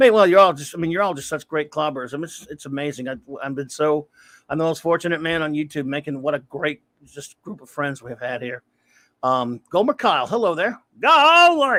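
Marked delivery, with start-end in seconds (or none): 11.0-11.8 very high, raised, goofy exclamation, a bit louder. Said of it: "a stupid [name] impersonation".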